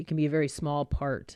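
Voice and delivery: ordinary talk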